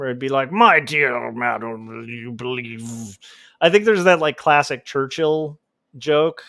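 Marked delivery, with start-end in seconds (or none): 0.5-3.2 put-on very slow, tipsy old British gentleman voice. Acting out a parliamentary exchange: funny old British gentleman drinking voice. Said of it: "old British gentleman drinking voice".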